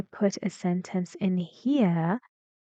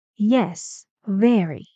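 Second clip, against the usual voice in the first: falling intonation, pitch dropping away at end of very; 5 dB louder than usual. Demonstrating sentence intonation to listeners, saying it with falling intonation. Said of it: "in here it's falling intonation".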